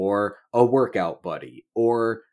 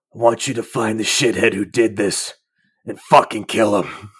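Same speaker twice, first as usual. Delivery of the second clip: put-on dying man voice, louder; 5 dB louder than usual. Acting out a dying man calling Peter closer: imitating dying Uncle Ben. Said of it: "finds him dying on the street".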